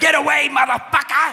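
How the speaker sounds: very high, loud fake Scottish brogue yell. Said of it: "I know, I'm bad".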